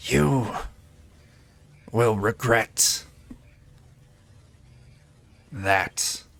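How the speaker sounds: sibilant, hissing rat creature voice. Narrating a game scene, voicing the fallen giant rat creature: hissing rat creature voice. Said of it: "And it hisses out".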